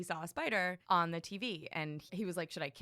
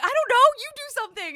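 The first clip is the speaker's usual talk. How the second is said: put-on yelling, higher and louder; 15 dB louder than usual. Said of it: "Yelling at each other".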